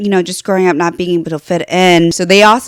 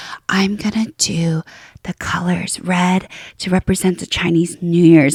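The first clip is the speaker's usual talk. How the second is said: confiding, hushed, soft whispered aside; 6 dB quieter than usual. Retelling someone whispering to the camera: imitating a whisper. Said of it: "she just kind of whispers to the camera".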